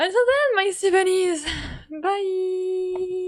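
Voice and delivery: brighter smiling voice. Saying goodbye to viewers again, saying it smiling more. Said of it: "I should smile more".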